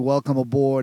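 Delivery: ordinary delivery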